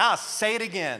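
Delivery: mock-sassy attitude. Speaking to both campuses about scripture, imitating Paul with attitude. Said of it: "Paul's got a little attitude".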